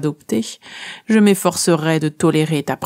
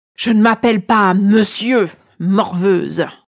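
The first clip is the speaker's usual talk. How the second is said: hollow, cavernous tone; 4 semitones higher, 3 dB louder than usual. Reading a story, the great dragon cuts off the narrator: cavernous voice. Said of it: "d'une voix caverneuse".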